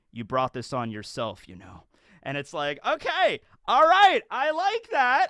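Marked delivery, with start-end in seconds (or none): 0.2-1.9 mock dry, flat, low deadpan. Retelling how Garp turns and looks at Roger, then answers; retelling a deadpan remark. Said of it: "looks at Roger deadpan and he's like".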